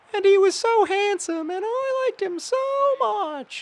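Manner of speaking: strange, weird, very high, squeaky falsetto. Speaker shows how reading a teen girl's observations would sound: weird falsetto voice. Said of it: "in like a weird falsetto voice".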